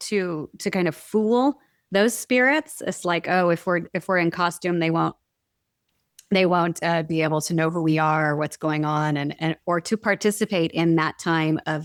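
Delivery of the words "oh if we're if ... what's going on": ordinary talk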